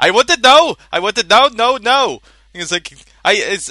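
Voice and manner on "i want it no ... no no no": put-on Indian accent, slow, drawn out, raised. Repeating a demanding line for a joke: Indian accent. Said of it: "I sound more like Indian doing this".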